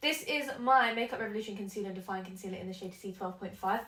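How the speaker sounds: very fast, rushed, rattled-off delivery. A makeup video host talking to her viewers, very fast. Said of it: "I said that so quickly".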